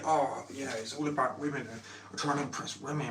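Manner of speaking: scornful, derisive put-on show-off voice, sarcastic. Imitating a guy from a video who shows off cars: mocking imitation of a guy. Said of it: "I'm mocking right now".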